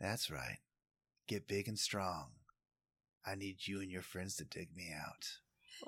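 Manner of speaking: very quiet half-whisper under the breath. Voicing a character who half-whispers to a rat licking his hand: half-whispering. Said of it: "And he whispers".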